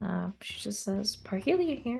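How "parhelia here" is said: very soft, stealthy voice, pitched slightly higher. Voicing a character answering a call over a communicator: very soft voice. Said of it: "says in a very soft voice".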